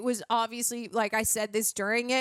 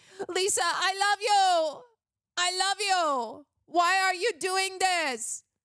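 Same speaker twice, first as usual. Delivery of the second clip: put-on flat Polish accent, higher pitch; 8 semitones higher than usual. Mocking how a man on screen speaks: imitating emotionless Polish-accented speech. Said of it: "when he gets emotional, does he speak".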